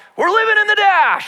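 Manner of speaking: high, loud yell, as if asleep.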